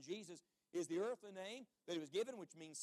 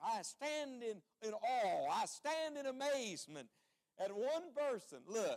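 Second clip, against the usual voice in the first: usual speaking voice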